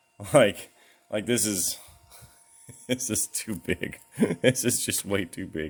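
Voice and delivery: words broken up by helpless giggling. Putting up something absurdly big, the speaker can't stop giggling. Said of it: "I just can't stop giggling".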